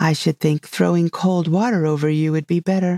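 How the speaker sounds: usual speaking voice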